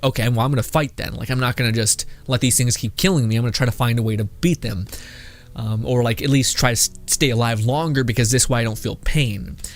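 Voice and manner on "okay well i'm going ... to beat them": ordinary talk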